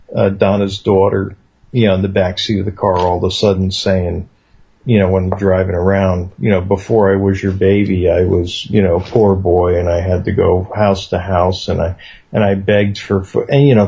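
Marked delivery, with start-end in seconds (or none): none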